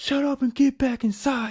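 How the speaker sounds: high, shrill cop-style yell, pitched way up. Retelling a cop ordering the manager back inside: imitating a cop yelling. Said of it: "He was yelling at our ass".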